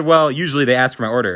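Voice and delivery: ordinary talk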